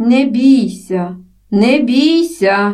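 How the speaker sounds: very slow, drawn-out calling out. Someone close by calls in german to a fallen, screaming woman, calling out. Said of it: "гукнув хтось зовсім поруч".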